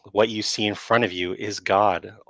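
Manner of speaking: plain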